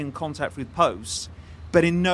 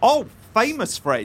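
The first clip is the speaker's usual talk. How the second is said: loud, high-pitched shout; 7 semitones higher, 5 dB louder than usual. Answering whether they were good friends with him, shouting. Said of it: "Why are you shouting so much?".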